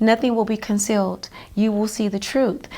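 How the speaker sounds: usual speaking voice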